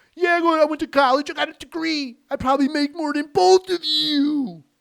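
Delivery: put-on shrill, loud drunken hollering, very high-pitched. Retelling a man in a police car's back seat yelling at the police: imitating a drunk yelling. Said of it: "As he's yelling to the police all drunk".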